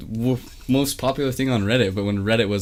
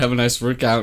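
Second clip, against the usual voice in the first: normal talking voice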